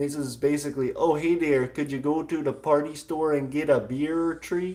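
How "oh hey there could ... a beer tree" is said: put-on Upper Michigan accent. Showing how Yuppernies talk: imitating a Yooper accent. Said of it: "I like the accent".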